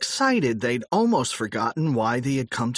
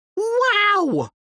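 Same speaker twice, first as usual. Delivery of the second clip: very high, drawn-out exclaimed cry; 5 dB louder than usual. Exploring a friend's future house, the speaker is crying out. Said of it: "cried Harold".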